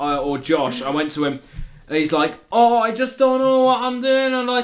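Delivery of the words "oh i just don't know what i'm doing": put-on broad Scottish accent, very high and loud. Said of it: "he has a strong Scottish accent".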